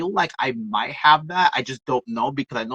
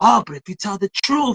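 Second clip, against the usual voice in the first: put-on high, louder old-school elder voice.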